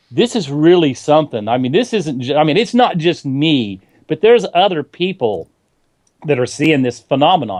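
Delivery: ordinary delivery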